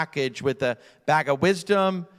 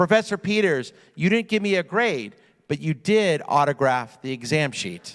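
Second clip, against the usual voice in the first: normal talking voice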